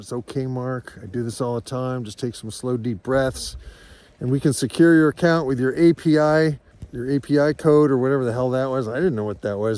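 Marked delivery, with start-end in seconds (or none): none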